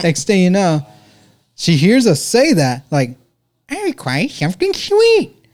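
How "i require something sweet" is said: over-the-top, very high, swooping put-on voice. Retelling joking in a booth, imitating a friend's exaggerated voice. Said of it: "we're just mimicking a friend of ours".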